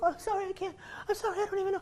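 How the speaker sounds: put-on near-tears voice, pitched way up. Retelling how the helper apologized after the trick failed: imitating someone in tears. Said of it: "in tears".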